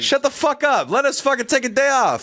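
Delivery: put-on all-out high-pitched shouting rant. Joking about late-night hosts taking a week off, the speaker starts yelling. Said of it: "I don't know why I'm yelling at you guys".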